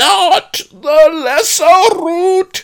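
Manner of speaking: very high, very loud, slow, drawn-out bellowing roar. The patron of ginseng answers the pleading pawnbroker Fang, roaring. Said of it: "roared the patron of ginseng".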